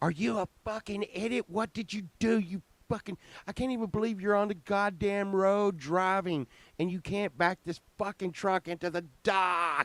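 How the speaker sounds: very high, furious, angry screaming. Retelling what he yelled after a truck driver wrecked at his dock, retelling his own yelling. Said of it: "I'm yelling and I'm screaming".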